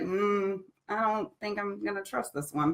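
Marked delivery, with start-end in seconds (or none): none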